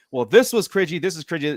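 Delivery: ordinary delivery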